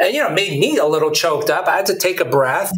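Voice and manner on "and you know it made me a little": ordinary delivery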